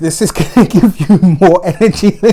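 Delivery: talking through laughter. Reading the Cancer horoscope to viewers, laughing while talking. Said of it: "I'm laughing because I know myself".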